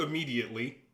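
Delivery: strong stress on immediately. Answering a player about the heat's effect: stress on immediately. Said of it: "Emphasis on the word immediately".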